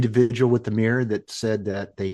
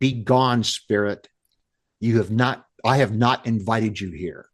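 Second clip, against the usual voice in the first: acted, mock-demanding, insistent tone of voice. Retelling how they order an uninvited spirit away, retelling a demanding command. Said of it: "in a demanding voice".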